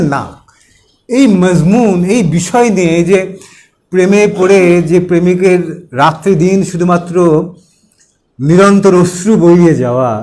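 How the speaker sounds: plain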